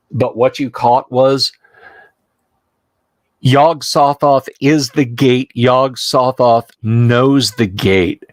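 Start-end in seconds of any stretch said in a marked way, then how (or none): none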